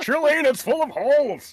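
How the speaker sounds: yelling in character. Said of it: "There's no need to yell".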